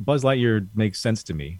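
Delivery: plain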